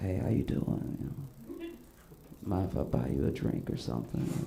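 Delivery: put-on breathy, smooth flirty voice, laid on thick. Retelling a friend approaching a woman at a club: imitating a friend's smooth pickup line. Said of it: "he lays his thickest game on".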